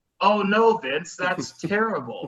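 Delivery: play-acted high, hollow, sarcastic sympathy. Imagining his reply if he were in a wrestler's place, acting out a sarcastic reply.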